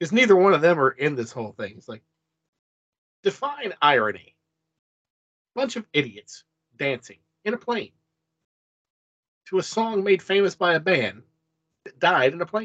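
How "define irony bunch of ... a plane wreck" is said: slow, drawn-out delivery with swooping pitch. Quoting a favourite movie line: Steve Buscemi impression. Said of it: "there's my Steve Buscemi impression".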